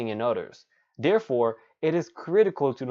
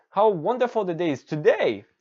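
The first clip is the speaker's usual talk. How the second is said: high, joyful exclamation, rising then falling pitch; 5 semitones higher, 4 dB louder than usual. Speaker demonstrating how an exclamation sounds, as a happy exclamation.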